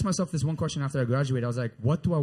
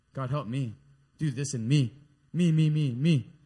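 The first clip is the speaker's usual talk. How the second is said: drawn-out voice like a small schoolkid. Acting out a self-centered prayer to a congregation: praying like an elementary school kid. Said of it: "I sound like one of my, my elementary school kids".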